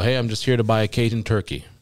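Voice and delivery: plain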